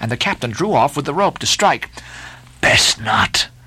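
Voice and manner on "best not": hissed, much lower pitch. The lakeman answers the captain, who draws back a rope to strike: hissed. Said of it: "hissed the lakeman".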